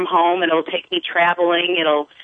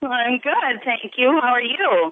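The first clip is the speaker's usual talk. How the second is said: bubbly, lively, bright and high voice; 6 semitones higher than usual. As a caller to the show, greet the host in a bubbly voice. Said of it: "I love the bubbliness in your voice".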